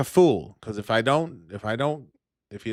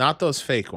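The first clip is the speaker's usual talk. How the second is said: normal talking voice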